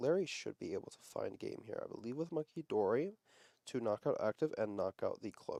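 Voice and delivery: quiet, dropped-down tone. Commentating on a card game, dropping into a lowered voice. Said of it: "I'm gonna lower my voice here".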